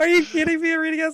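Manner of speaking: thrilled, loud, very high shriek of disbelief. Reacting to a big dice roll: loud excited yelling. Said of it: "I'm sorry if that was loud for anyone".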